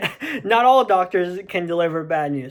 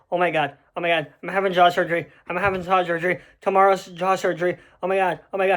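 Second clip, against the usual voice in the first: put-on panicked voice. Retelling the night before jaw surgery: imitating own panicked self. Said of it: "I was just panicking".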